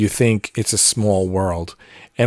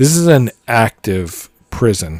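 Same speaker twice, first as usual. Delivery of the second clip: usual speaking voice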